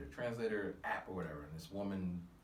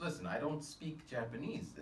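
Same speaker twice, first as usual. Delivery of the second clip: usual speaking voice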